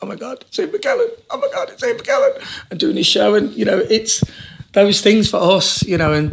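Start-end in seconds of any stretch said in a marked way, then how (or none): 0.0-2.7 very high, swooping, tearful, starstruck gushing, acted out. Recalling watching Ian McKellen's one-man show, retelling own crying. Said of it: "I'm sitting there crying and going".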